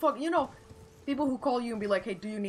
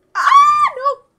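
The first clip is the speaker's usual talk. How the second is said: very loud, high-pitched, shrill shout; 20 dB louder than usual. Reacting to a game enemy mid-story: loud outburst. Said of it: "Sorry, that was loud".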